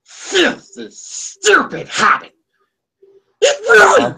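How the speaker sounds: very high, very slow, drawn-out creature voice. Trying out an impression after hearing about one: Smeagol voice. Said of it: "He'll do a Killer Smeagol impression".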